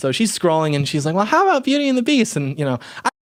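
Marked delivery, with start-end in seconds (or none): 1.2-2.4 put-on very high little-kid voice. Retelling what a young lady said while choosing a Disney movie, in a childlike voice. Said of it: "he did like a child voice".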